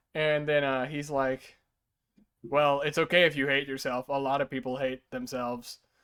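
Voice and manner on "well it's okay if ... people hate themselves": normal talking voice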